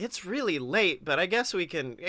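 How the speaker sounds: ordinary talk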